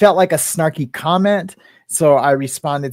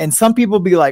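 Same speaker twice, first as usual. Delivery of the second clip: usual speaking voice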